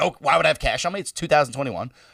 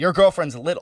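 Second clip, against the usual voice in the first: ordinary talk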